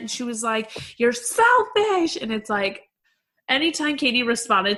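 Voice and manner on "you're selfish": put-on screaming, higher pitch. Retelling a fight where Stassi kept screaming: imitating Stassi screaming. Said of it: "She just kept screaming".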